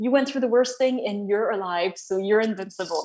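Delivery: plain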